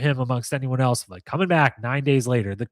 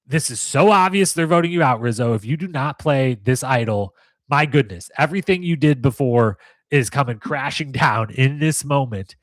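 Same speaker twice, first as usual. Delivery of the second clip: plain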